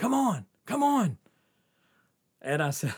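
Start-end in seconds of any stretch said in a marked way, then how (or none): 0.0-1.2 urgent high-pitched yelling. Retelling a friend in a car yelling to jump in: imitating a friend yelling. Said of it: "she's yelling".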